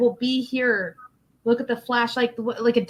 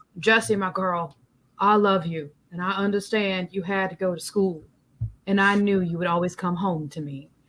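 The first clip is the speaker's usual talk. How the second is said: put-on deep voice with an old country twang; 4 semitones lower than usual. Voicing a dog from a comic talking to its girl: deep Sam Elliott voice with country twang. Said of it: "I imagine him saying it in this, like, deep, like, Sam Elliott voice, like, with an old country twang".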